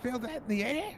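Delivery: very high, slow, drawn-out kobold creature voice. Voicing a game character's line for the group: kobold voice. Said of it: "Everyone's getting Kobold voice".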